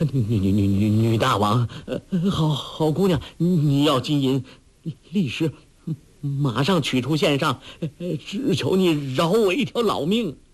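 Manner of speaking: quavering, trembling, panicked, frightened pleading voice. The panicked household master kneels and begs Huang Rong for his life, trembling voice. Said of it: "颤声说".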